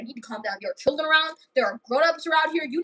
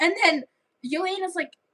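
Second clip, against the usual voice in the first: plain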